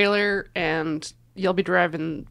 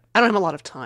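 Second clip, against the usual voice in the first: put-on, exaggerated huffy, dismissive tone. Acting out refusing to take a button, huffy. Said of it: "I act real huffy".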